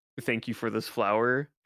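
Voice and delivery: sarcastic thank-you tone. Retelling thanking another player for a useless rose: retelling a sarcastic thank-you. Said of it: "sarcastically saying".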